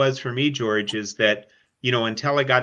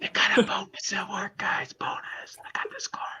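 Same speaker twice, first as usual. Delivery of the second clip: slow, secretive whisper; 9 semitones higher, 6 dB quieter than usual. Imitating the other speaker, who hopes his wife isn't listening: imitating someone whispering. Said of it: "You're whispering".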